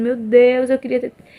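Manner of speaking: put-on crying. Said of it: "E eu chorando, chorando, e eu dizendo".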